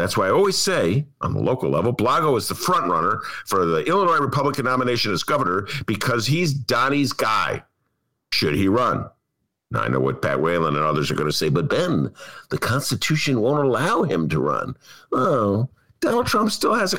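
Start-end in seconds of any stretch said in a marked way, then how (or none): 11.5-14.8 weak, offhand, half-hearted voice. Imitating what a friend would object: Pat Whalen impression. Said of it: "You can give him a better impression than that".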